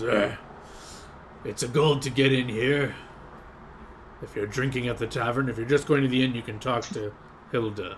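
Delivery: complaining, grumbling voice. Game master voicing a man who overhears the players' remark; grumbling. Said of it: "He kind of grumbles".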